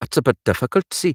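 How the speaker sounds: loud, high-pitched Geordie accent. Trying out a hard accent and not getting it right, doing an Ant and Dec Geordie accent. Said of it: "it's Ant and Dec, but it's such a hard accent to get right".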